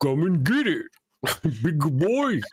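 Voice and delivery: lumbering, slow, walrus-like sea cow voice. Imagining the sounds a manatee makes in one's head: walrusy manatee voice. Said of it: "walrusy kind of".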